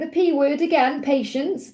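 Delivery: ordinary talk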